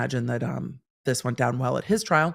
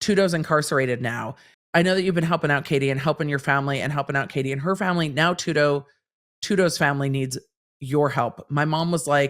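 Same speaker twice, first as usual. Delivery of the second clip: plain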